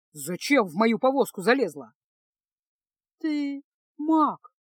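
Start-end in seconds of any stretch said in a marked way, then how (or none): 3.2-4.4 high, choked, strangled, squeezed-out voice. Feska, caught in the mage's wagon, answers him: strangled voice. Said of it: "выдавить из себя Феска сдавленным голосом".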